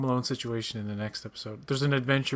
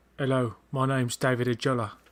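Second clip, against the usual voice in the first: put-on thick Cockney accent. Discussing an actor from Hackney, doing David Ajala's thick Cockney accent. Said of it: "he has a very thick Cockney accent".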